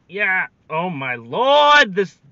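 shouting. While streaming a laggy Pokemon game, the speaker yells. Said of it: "I'm sorry for yelling".

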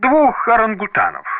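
breezy, nonchalant, carefree, very high offhand voice. Reading a memoir aloud, the narrator answers the others' question: carefree reply. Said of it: "беззаботно ответил я".

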